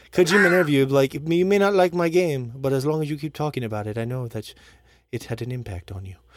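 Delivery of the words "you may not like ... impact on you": put-on Italian-sounding accent. Imitating Kojima in an interview: Kojima impression with Italian-sounding accent. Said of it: "He has an Italian accent now?".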